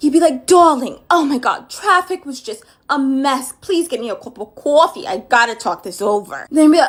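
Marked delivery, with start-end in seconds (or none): 0.5-6.5 put-on thick New Jersey accent, laid on. Impersonating how an Italian man would come in and talk, with a thick Jersey accent. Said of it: "let me give a really good impersonation".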